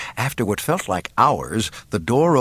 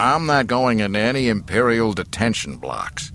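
usual speaking voice

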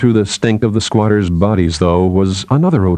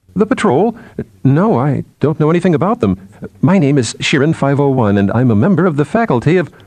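unsure, hesitant, uncertain tone, pitched up; 6 semitones higher than usual. Shirin replies to the bearded leader's question about the patrol, uncertain. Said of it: "Shirin said uncertainly".

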